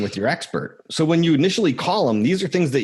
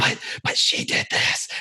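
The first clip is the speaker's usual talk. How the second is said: screaming in a whisper. Retelling people at a domestic call answering back: imitating someone whisper-screaming. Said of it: "They'll start screaming at me in a whisper".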